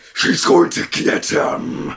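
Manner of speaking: deep, gravelly scary voice. Acting out a girl in a mask scaring her little brother: deep, gravelly voice. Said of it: "scares him with a deep, gravelly voice".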